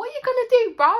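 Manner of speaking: loud, high-pitched mock English accent. Showing how she used to speak: imitating her own old accent. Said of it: "That's how I spoke, but with".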